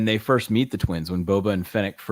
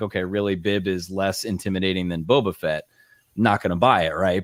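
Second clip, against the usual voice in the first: ordinary delivery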